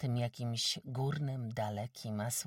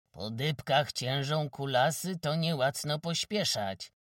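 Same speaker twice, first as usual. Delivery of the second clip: loud, scornful, taunting, mocking tone; 3 semitones higher, 6 dB louder than usual. Narrator reads the blacksmith, angry at not finding money, adding a mocking remark. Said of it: "dorzucił urągliwie".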